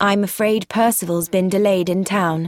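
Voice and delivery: ordinary talk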